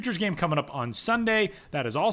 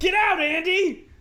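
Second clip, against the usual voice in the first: mock very high, shouted yell; 14 semitones higher, 4 dB louder than usual. Acting out the skit when Andy Richter barges in: imitating Conan O'Brien yelling. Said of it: "Conan O'Brien skits".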